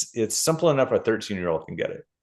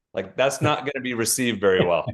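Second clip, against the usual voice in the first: ordinary talk, nothing marked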